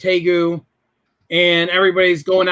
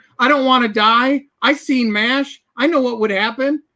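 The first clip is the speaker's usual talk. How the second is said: put-on tearful pleading, higher pitch; 6 semitones higher than usual. Retelling a phone call to his mother at eighteen: imitating his own crying plea. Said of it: "I probably was crying like a baby back then and going".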